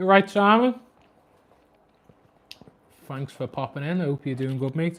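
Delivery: talking with mouth full. Speaker greets Simon, who popped in, while eating chips: talking with mouth full. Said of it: "Sorry if I sound like I'm shoveling food down my mouth".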